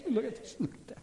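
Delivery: put-on breathy whisper with hushed laughing amusement. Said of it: "men make their plans and God laughs".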